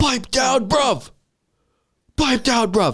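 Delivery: very high, shrill, drawn-out yell, acted out. Retelling how a wrestler silenced a crowd: imitating Will Ospreay yelling. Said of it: "And then he just yells".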